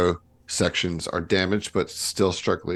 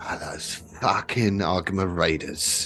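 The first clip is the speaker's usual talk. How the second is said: muttered under breath, quieter; 5 dB quieter than usual. Voicing a woman after a shuttle crash: muttering under her breath. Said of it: "you kinda hear her under her breath say".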